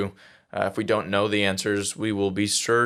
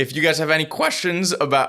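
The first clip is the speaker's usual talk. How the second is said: voice cracking and breaking, pitched up; 7 semitones higher than usual. Telling the audience to send in questions, when the voice cracks. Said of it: "bad voice crack".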